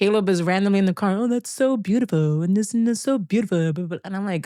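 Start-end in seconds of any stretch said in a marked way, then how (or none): 1.2-4.0 mocking, mock-upset delivery. Retelling how a partner imitated the speaker being upset with them, mimicking it sarcastically as a joke. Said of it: "I'm pretending to be you when you're upset at me".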